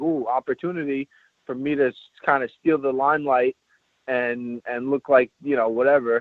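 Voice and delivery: ordinary talk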